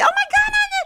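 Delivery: excited high-pitched voice. Showing how the voice sounds when too excited: excited high-pitched voice. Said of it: "my voice goes higher and higher pitch".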